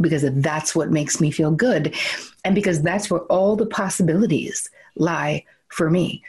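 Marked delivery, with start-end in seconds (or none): none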